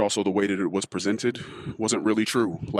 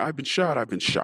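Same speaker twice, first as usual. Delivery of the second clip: put-on, high-pitched screaming cry of a man; 5 semitones higher than usual. Telling a child a made-up story of a shot man, acting out a man screaming. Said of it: "And he's screaming".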